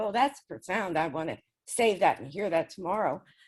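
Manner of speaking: usual speaking voice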